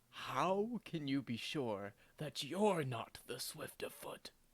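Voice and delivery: whispered speech. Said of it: "Normir whispers to Sylvie and says".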